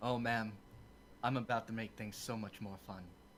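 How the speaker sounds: brash, cocky, confident and self-assured. Speaking in character to an old woman at a tavern: cocky. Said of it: "I put a cocky smile on my face".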